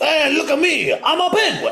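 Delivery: very high, very slow, drawn-out, loud comic voice. Taking a turn at a best impression of The Penguin: Penguin impression. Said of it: "let's all do, I'll start our best penguin impression".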